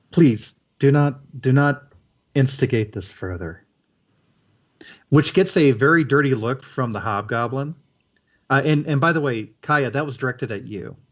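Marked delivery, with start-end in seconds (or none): 0.1-3.6 soft mutter, slower. Game master voicing a shaman who recoils and speaks up: muttering softly. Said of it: "mutters quite softly".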